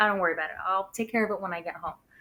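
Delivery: put-on super calm voice. Retelling his reply about the declined credit card: imitating someone super calm. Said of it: "super, like, calm about it".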